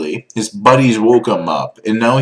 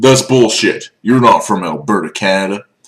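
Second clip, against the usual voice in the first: rough put-on Texan accent; 2 semitones lower than usual. Retelling a man who doubted the speaker was from Alberta, in a Texan accent. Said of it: "Why I did that kind of Texan accent".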